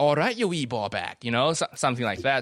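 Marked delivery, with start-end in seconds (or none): 0.0-1.2 poor, put-on attempt at a Glasgow accent. Retelling a stand-up joke about a Malaysian guy going home: bad Glaswegian accent. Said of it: "he just does an accent like".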